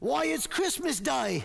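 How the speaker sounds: put-on best-effort, high, little British boy accent. Retelling how the little boy answers, in a little British boy accent. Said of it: "that's my best little British boy accent".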